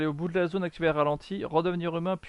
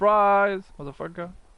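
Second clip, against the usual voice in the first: loud, fake, put-on English accent; 4 semitones higher, 6 dB louder than usual. Mid-game, the speaker switches from french into a put-on english accent. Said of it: "Mon accent anglais est très bien aussi".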